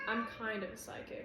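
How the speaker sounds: plain reading voice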